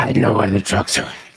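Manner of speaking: very low, strangled, choked, rushed muttering voice. Describing a man whose suit actually chokes him, the speaker is imitating a choked voice. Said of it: "it actually chokes him".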